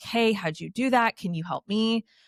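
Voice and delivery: ordinary talk, nothing marked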